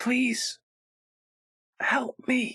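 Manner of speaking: tiny, small, feeble, weak, high voice. As Silex clears rubble, an unseen voice speaks: small, quiet, weak voice. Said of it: "you hear in the smallest voice, it sounds so quiet and weak".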